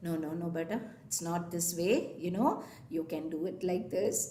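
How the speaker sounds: mild, low, soft, gentle coaxing voice.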